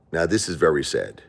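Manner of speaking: ordinary talk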